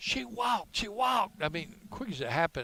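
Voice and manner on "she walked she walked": very high, screamed voice. Retelling screaming when the horn went off at a game, retelling a scream. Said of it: "And I'm screaming".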